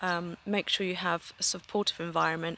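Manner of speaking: ordinary delivery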